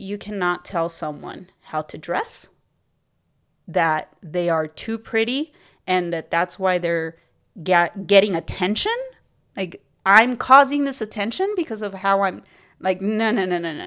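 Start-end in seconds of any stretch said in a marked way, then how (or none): none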